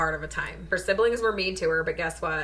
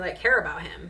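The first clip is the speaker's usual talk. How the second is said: plain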